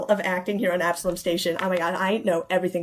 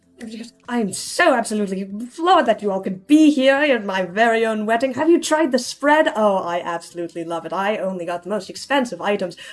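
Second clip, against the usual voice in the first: effusive, lively, animated chatter gushing with delight; 2 semitones higher than usual. Voicing Julian, who talks more actively than her fiance, in animated gushing. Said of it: "She is very much more animated".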